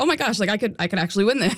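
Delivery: put-on panicking tone. Recounting a winning streak, re-enacting own past panic. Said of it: "I kind of started panicking".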